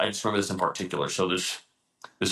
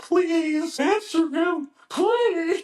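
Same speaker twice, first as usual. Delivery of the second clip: put-on very high, slow, drawn-out tearful crying; 4 dB louder than usual. Retelling how a trainee begged while crying during planks: imitating someone crying and pleading. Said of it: "and he starts, like, crying".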